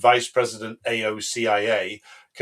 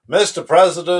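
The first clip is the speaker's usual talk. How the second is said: loud, raised put-on American accent; 7 semitones higher, 7 dB louder than usual. Voicing a Republican who talks to Trump, speaker does an American accent. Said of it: "I'll do the American accent".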